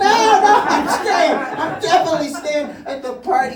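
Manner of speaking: put-on high, loud, insistent, drunken voice.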